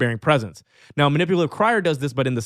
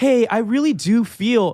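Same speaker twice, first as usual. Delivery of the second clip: rising tone, much higher and slower; 9 semitones higher, 3 dB louder than usual. Coaching on tonality, showing the submissive way to talk: upward inflection. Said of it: "that's called upward tonality".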